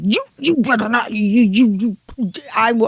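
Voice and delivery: put-on weird, furious, stumbling voice. Retelling how a woman reacted to the others' plan, imitating a weird furious voice. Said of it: "She goes ballistic with this weird face and weird voice".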